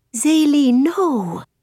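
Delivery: whispering under one's breath. Narrator reads a character reacting as another throws a note down: whispered under breath. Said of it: "I whisper under my breath".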